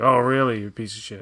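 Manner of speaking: mock earnest tone that comes across sarcastic. Describing a man whose sincere replies sound sarcastic, giving a mock-sarcastic 'Oh, really?'. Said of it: "it almost sounds like sarcasm".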